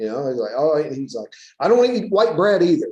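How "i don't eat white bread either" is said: put-on crotchety, grumpy old man voice, loud and high. Retelling what a ninety-two-year-old man said: imitating Anderson's grumpy old man tone. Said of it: "he'd say it kind of that grumpy old man tone".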